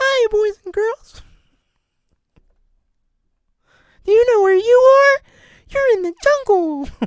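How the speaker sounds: squeaky voice, high and loud. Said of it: "So he just sounds like Mickey".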